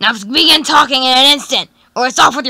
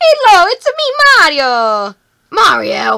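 very slow sing-song, swooping pitch, drawn-out me; 4 semitones higher than usual. Picturing Mario breaking in to take the princess, imitating Mario. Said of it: "Mario can just break in here".

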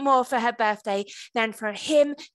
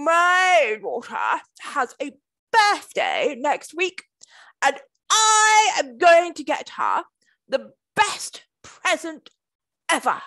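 grand, regal, proud boastful voice with swooping pitch; 3 semitones higher, 3 dB louder than usual. Narrator reading the king speaking to the other kings at dinner, in his proudest voice. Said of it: "he said in his proudest voice".

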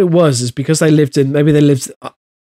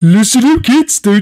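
goofy, high-pitched cartoon bear character voice; 7 semitones higher than usual. Asked for a sentence as Roland Rat, make an attempt sounding like Yogi Bear. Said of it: "that's more like Yogi Bear".

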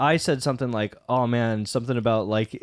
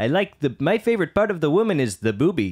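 high, swooping cartoon captain voice; 5 semitones higher than usual. Trying an old impression he used to do, Zapp Brannigan impression. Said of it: "I used to like doing Captain Zap Brannigan".

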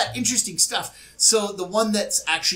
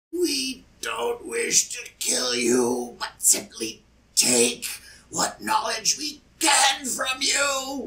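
strange creature voice from a twisted little mouth; 4 semitones higher than usual. A game master voices a damaged creature speaking to the players; weird, twisted creature voice. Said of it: "it speaks in its weird, twisted little mouth".

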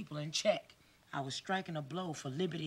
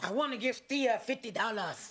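attempted put-on Jamaican accent; 6 semitones higher, 4 dB louder than usual. Repeating phrases after someone, practicing a Jamaican accent. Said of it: "teach me that Jamaican accent".

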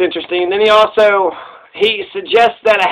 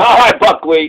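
put-on dismissive voice. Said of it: "It's dismissive".

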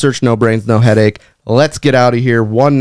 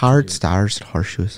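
put-on Irish accent, lower and quieter; 4 semitones lower, 7 dB quieter than usual. Giving a little taste of an Irish accent when pushed to try it. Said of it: "staying in an Irish accent the whole time".

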